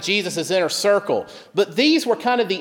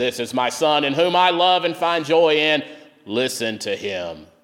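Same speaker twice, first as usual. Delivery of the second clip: slow, deliberate delivery, each word weighed out; 4 semitones lower than usual. Retelling how God spoke to the disciples: big booming voice of God. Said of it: "the big booming voice of God comes up and says".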